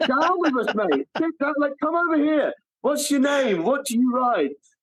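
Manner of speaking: high, excited, eager gushing fan voice.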